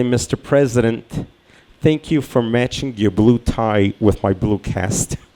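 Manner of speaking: ordinary talk, nothing marked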